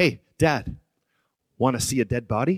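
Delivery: very loud, full-voiced delivery. Speaker retelling his son bursting in on his nap, in full voice. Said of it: "in full voice says".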